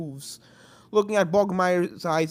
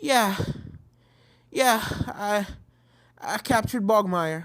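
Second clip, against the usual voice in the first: trembling, faltering, stammering shaky voice; 3 semitones higher than usual. After a tiring fight, answering a companion's question, shaky voice. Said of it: "your voice is shaking".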